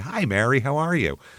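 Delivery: calm, sweet, pleasant tone, as sweet as possible. Retelling how a woman, after screaming on the phone, greeted Mary, imitating a calm, pleasant voice. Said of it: "In a calm, pleasant voice, she'd say".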